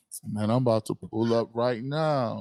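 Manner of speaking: mock slow, drawn-out drawl. Imitating someone who says they are on their way: imitating someone saying it slowly. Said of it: "And they be saying it slow".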